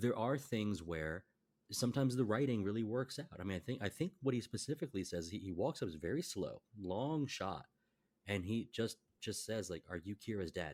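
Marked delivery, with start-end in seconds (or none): 9.9-10.7 put-on mimicked childlike speech, quieter. Retelling a film character's line to the father: imitating speaking like a child. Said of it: "very much like speaking like a child".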